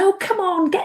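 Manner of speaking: high, impatient voice. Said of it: "she'd be going".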